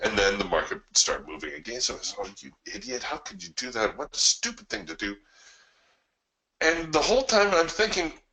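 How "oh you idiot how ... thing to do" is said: mock-upset angry tone, quieter. Retelling how a trader scolded himself as the market moved against him, mock-upset self-scolding. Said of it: "he's getting all bent out of shape".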